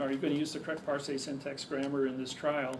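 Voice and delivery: ordinary talk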